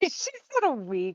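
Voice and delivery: speaking while chuckling and laughing. Recalling another player's funny line: chuckling while talking. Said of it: "I'm still chuckling".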